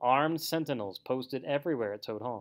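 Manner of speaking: ordinary talk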